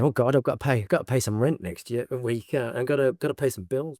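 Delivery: mock scared, worried tone. Retelling past worries about paying bills: mock scared worrying. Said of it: "I like being scared, going".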